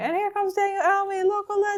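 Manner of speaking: high-pitched announcer voice on a microphone. Retelling announcing a runner at the finish line: retelling own announcer call. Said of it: "you hear me on the microphone".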